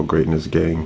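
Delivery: ordinary delivery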